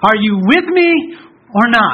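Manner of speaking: defiant, challenging, confronting tone. Preacher voices a believer putting God on trial, in a challenging voice. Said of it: "in a challenging voice".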